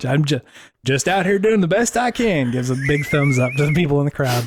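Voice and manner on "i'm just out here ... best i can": southern drawl, pitched a bit higher. Improvising a normal-guy character introducing himself to a crowd, in Normie's southern drawl. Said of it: "Why does he have a southern drawl?".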